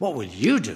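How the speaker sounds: heavy emphasis landing on the word you. Repeating the question about outdoing Moses, with stress on 'you'. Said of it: "the emphasis is on the word "you."".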